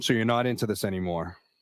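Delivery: ordinary delivery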